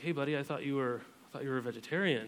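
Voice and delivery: put-on soft, gentle, affectionate, loving tone. Retelling what was said to a son at lunch: retelling own loving words. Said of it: "I just said lovingly".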